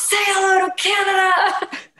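shrill, high, drawn-out top-of-the-lungs yell. Recalling artists walking past, the speaker re-enacts yelling at one: retelling a loud yell. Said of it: "I just yelled at the top of my lungs".

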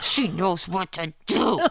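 words pushed out through gritted teeth. Retelling a mother's reply on the phone at two in the morning: imitating mom talking through gritted teeth. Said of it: "she talks to me through my teeth".

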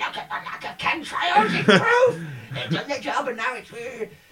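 jeering put-on troll voice. Imitating the chemtrail people who are loving this: mocking cave-troll voice. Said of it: "They sound like cave trolls".

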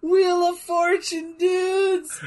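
squealed cry, very high-pitched and very slow. Retelling a cartoon scene where Michelangelo gets spun around: imitating Michelangelo screaming. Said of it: "he just screams".

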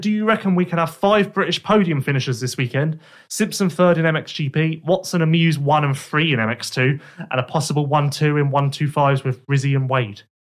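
ordinary talk

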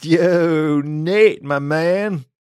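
put-on drunken-sounding, loud, rowdy, slurred boisterous delivery. A wolf calls through the opened door to nate, slurred and boisterous. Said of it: "slurred and boisterous".

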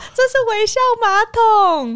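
put-on very high, beaming, delighted little-kid chirp. An aunt retells what the little child said, imitating a happy child. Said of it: "他就很开心的说".

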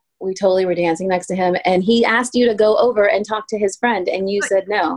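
ordinary delivery

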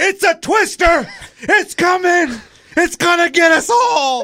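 acted, shrill, very high, loud screaming. Retelling a storm as a homeless man yelled down the bridge, imitating a man screaming. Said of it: "he's screaming this, yelling down the bridge".

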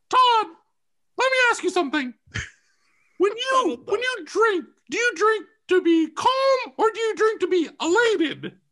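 very high-pitched voice. Retelling your brother's phone calls to you, doing his voice: high-pitched brother impression. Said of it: "this is the voice I use. Because he gets a little high pitched".

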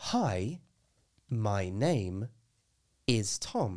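speaking very slowly. Showing how to slow an English sentence right down, very slow speech. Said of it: "You're slowing it right down".

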